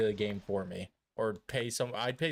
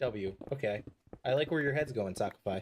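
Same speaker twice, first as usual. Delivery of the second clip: plain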